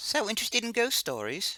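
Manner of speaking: put-on Scottish accent slipping into Cockney. Doing voices in a reading, trying a Scottish accent that comes out Cockney. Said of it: "I'm trying to do a Scottish ac- Scottish or Irish accent".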